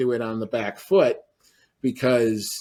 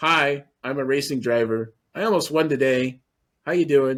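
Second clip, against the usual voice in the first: put-on calm, mellow voice. Picturing how the driver would introduce himself: imitating Oscar Piastri, very mellow. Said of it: "that guy who just kinda goes".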